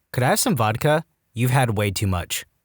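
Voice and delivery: ordinary delivery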